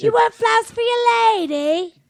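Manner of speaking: very high-pitched put-on flower-seller voice. Playing the flower lady, offering flowers to a man: flower lady character voice. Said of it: "And I'm the flower lady".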